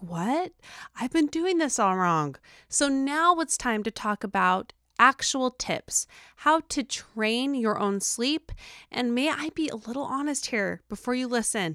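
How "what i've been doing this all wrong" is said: sudden, caught-off-guard surprised realization. Retelling own reaction on first hearing the sleep advice: retelling own surprised reaction. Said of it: "you can already hear the surprise in my voice".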